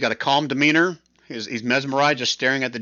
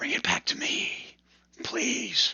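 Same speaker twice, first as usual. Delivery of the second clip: slow, hushed, eerie whispered wraith voice; 12 semitones higher, 7 dB quieter than usual. Voicing the Wraith pleading for the item back: whispering Wraith voice. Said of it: "whisper back in his normal Wraith voice".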